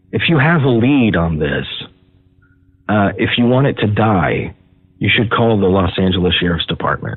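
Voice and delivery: sounding bitter. Warning that a lead sent to the sheriff's department will die: bitter tone. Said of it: "I'm sorry I sound so bitter on this".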